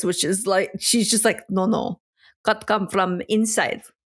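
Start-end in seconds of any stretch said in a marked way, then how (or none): 1.5-3.8 put-on elderly Russian-accented voice. Retelling what a seamstress said about the tent: imitating an old Russian seamstress. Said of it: "just the old Russian seamstress".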